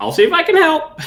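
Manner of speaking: very high, put-on parrot squawk. Voicing a raven that answers a player's plea for help: parrot voice for a bird. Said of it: "only know how to do a parrot voice for birds".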